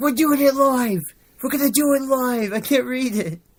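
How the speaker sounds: mock very high, loud, all-out on-air yelling. Retelling a video where Bill O'Reilly can't read the teleprompter: Bill O'Reilly yelling. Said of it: "But he's just yelling. He's like".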